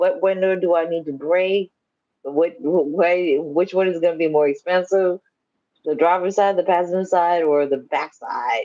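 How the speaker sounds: plain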